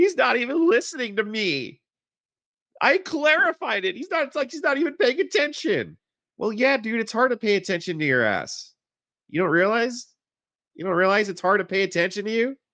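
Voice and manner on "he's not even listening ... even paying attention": play-acted crybaby whining, high-pitched. Commenting on a man's complaint, imitating him in a mock-whiny voice. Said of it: "He sounds so whiny".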